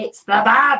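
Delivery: very loud, big announcing call-out. Retelling how parents greet them on entering the room: imitating parents calling out. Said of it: "always just call me the Bab in that voice".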